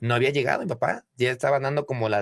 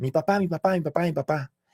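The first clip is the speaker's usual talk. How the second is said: restrained, held-back, repeated calling out; 4 semitones higher than usual. Retelling waking up on the couch at night: imitating own past shouting. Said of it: "empiezo a gritar".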